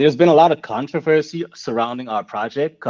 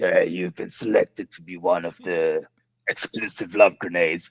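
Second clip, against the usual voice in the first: eerie, creepy, low, hushed voice; 6 semitones lower, 6 dB quieter than usual. Explaining what callers hear when they ring the number, speaker imitates it: creepy voice. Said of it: "like a creepy kind of voice".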